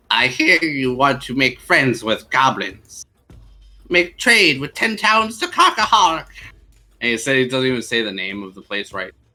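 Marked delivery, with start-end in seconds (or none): 0.1-6.2 odd put-on character voice, high-pitched, rising. Narrator voicing a character who is thanked for allowing a meeting, high-pitched character voice. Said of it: "in a high pitched uh, voice".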